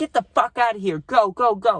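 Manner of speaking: high, put-on screaming. Retelling how a girl threw them out of her party: retelling her screaming. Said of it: "She's just screaming".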